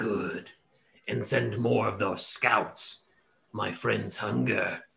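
slow, creaky creature voice, cackling to itself. Voicing the were tiger dismissing the players, cackling. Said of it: "cackles a little bit to itself and says".

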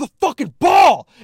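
loud, high bullying yell.

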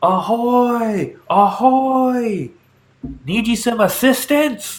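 very high, drawn-out hollered call. Describing approaching a ship that calls out, retelling a holler. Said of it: "It starts hollering".

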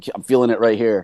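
ordinary talk, nothing marked

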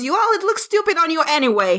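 high-pitched yell. Voicing an eleven-year-old girl yelling at her younger sister: yelling. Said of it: "throws her hands up and yells".

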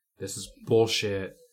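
ordinary talk

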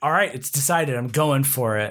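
plain

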